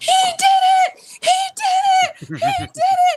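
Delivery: very high, loud, thrilled, excited scream. Telling how she reacted when he hit 50, retelling an excited scream. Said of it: "I screamed".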